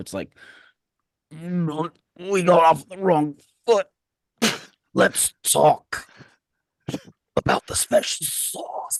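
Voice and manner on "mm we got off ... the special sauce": slow, high, heaving, gagging retching voice. Describing a frog-looking head that speaks, imitating a retching voice. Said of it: "in a voice that's it sounds like it's retching".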